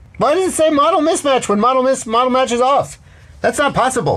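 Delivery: very high, excited, exuberant stand-up comic delivery. Puzzling over a software error message, slipping into a Seinfeld voice. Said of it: "I'm doing my Seinfeld voice by accident".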